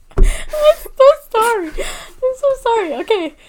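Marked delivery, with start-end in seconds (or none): 0.8-1.7 high, loud, giggling voice. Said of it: "You gave me the giggles".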